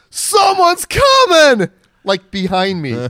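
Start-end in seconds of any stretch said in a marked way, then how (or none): 0.2-1.7 high, shrill, alarmed shout with voice shot up. Retelling how a lookout warned his friends: imitating someone yelling. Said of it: "the dude outside yells".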